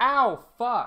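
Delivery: play-acted very high, shrill, full-throated yell of pain. Recounting being bitten hard on the toe, retelling a yell at full volume. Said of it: "I yelled, ow, at the top of my lungs".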